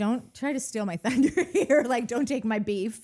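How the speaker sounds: sharp, snapped-back, snappy delivery. Retelling how Lacey snapped at someone over a scene: imitating Lacey snapping back. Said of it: "Lacey kinda snaps at him for".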